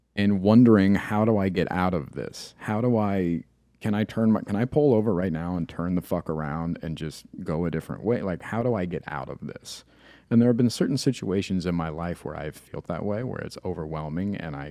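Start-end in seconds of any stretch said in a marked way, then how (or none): none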